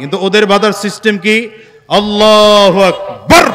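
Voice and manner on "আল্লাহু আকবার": shouted at full volume, very loud. Imitating how others begin their prayer, very loud shout. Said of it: "মানে এত জোরে বলবে".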